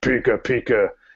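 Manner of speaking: put-on masculine creature voice. Describing a game scene where he tries to talk to a woman, in a masculine Pikachu voice. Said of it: "kind of more masculine voice than the regular".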